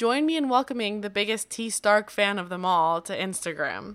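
ordinary delivery

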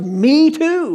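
high, excited shout from a man. Retelling how a man stood up after her: imitating a man shouting. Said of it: "a guy over on this side stands up and shouts".

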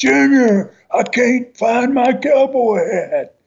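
mock very high, long-stretched, drawn-out scream. Retelling someone screaming to the back of a plane: imitating someone screaming. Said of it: "he starts screaming back to the back of the plane".

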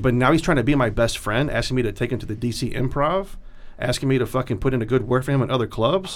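ordinary talk

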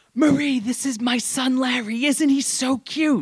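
very high, urgent, drawn-out shouted whisper. Retelling a mother introducing her son to an old lady: imitating a shout-whisper. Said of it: "shout whispering this".

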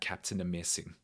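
weird put-on German accent. Recalling how someone said the hero's name; weird german accent. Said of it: "saying his name with that weird German accent".

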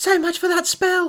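scared, terrified. Narrator reads a woman's line as she and a companion lock the doors; terrified. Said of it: "A terrified Louise said".

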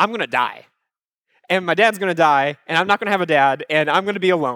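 ordinary delivery

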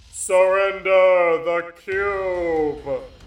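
thundering, very loud booming voice, "cube" drawn out. Narrating a story, voicing a voice from a fiery void: booming voice. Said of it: "A booming voice speaks".

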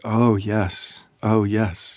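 tearful, watery-eyed, very slow delivery. Retelling how a listener answered with watery eyes: imitating a tearful reply. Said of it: "her eyes got all watery".

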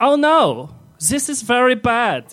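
put-on German accent, very high, very slow. Acting out a panicked thought you have, in a German accent. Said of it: "you think in a German accent".

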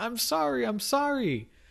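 mock very high, stretched-out, drawn-out shout. Retelling an episode, a man fleeing shooting mafia members yells back: retelling a yell. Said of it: "he yells back".

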